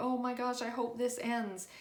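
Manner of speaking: ordinary talk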